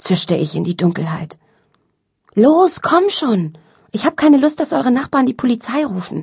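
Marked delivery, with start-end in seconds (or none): 2.3-6.2 high, pressing, urgent, insistent tone. Paolo presses the narrator from out in the dark: urging. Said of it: "drängte Paolo".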